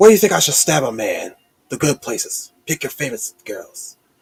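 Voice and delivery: grating, vicious, menacing villain snarl with scraping tone. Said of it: "a preview of how he sounds".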